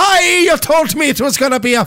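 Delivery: very high, loud put-on leprechaun Irish accent. Recounting a complaint about an estimate, putting on an Irish accent. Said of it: "Was like".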